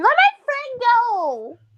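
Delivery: high, slow scream. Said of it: "And I just scream".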